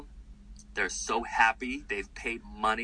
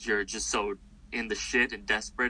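ordinary talk, nothing marked

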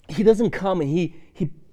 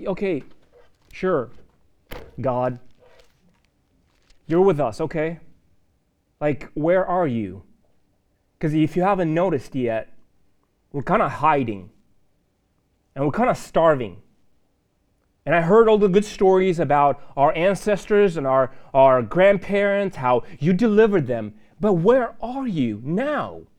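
ordinary delivery

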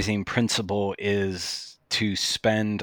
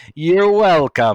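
smug, loud, high-pitched voice; 6 semitones higher, 8 dB louder than usual. Quoting a line from the Seen Red podcast, doing a Will Leach impression. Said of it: "I'm doing my best impersonation of his voice".

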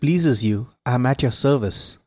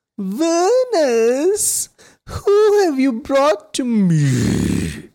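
thin, very high, swooping witch voice; 13 semitones higher than usual. Narrator voices a witch asking venus whom she has brought, thin, high witch voice. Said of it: "She spoke with a thin, high voice that occasionally rumbled".

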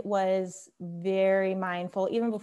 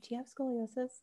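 soft, pitched-up half-whisper; 5 semitones higher, 8 dB quieter than usual. Recalling a Pilates teacher coming over with a question, imitating a half-whisper. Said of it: "she kind of whispered".

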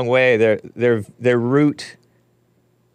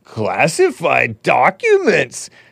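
slow, higher, drawn-out mocking drawl with a sneer. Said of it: "I'm mocking it".

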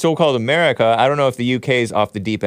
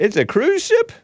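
very high, pitched-up voice. Asking a question about what is on screen: high-pitched voice. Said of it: "those high-pitched voice people".

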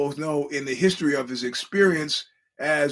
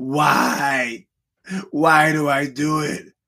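acted male crying, louder; 4 dB louder than usual. Retelling a crying man being given directions to the freeway, imitating a man crying. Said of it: "he's crying".

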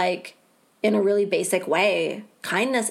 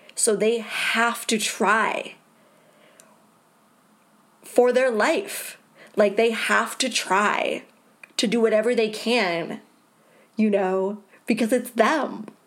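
tearful, near tears, slower. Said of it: "I am tearing up".

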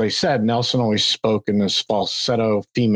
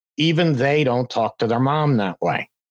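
ordinary talk

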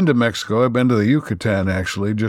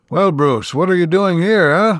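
poor fake Cuban accent, pitched up; 7 semitones higher, 4 dB louder than usual. Speaker retells what the doctor says to Bruce, bad Cuban accent. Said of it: "I can't do a very good accent".

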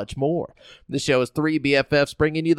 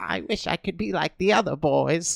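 put-on weak, sickly, bedridden boy voice; 4 dB quieter than usual. Acting out a friend as a bedridden sick boy from the fifteen hundreds: put-on sickly bedridden boy. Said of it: "He's like".

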